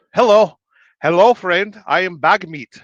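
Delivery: put-on Pakistani accent, high-pitched and loud. Joking about what bag meat sounds like, speak as bag meat in a weird Pakistani dude voice. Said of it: "sounds like a weird Pakistani dude".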